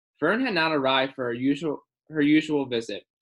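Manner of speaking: ordinary delivery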